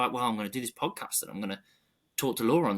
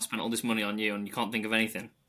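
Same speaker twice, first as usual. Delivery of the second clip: normal talking voice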